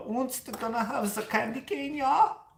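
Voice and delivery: very high, goofy, harmless, silly German accent. Showing the kind of german accent that is not scary: non-scary german accent. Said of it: "not the scary German".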